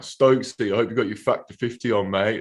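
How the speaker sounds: ordinary talk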